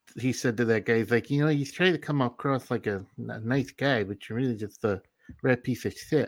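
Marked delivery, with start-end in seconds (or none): 1.4-6.3 put-on boxer voice with a lisp. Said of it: "that was my Mike Tyson impression".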